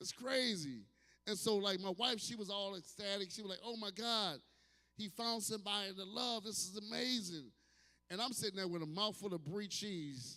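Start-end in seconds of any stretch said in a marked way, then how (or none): none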